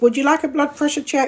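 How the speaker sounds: high, polite, routine-sounding voice.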